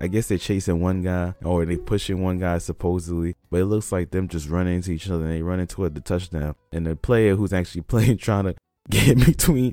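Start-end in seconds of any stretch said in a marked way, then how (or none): 6.7-9.7 talking through laughter. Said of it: "I'm sorry, I'm for laughing".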